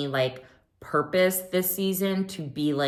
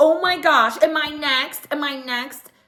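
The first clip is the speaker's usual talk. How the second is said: very high, very slow, drawn-out defensive voice; 12 semitones higher, 7 dB louder than usual. Retelling Garcelle's defensive reply: defensive Garcelle. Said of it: "Garcelle got defensive and was like".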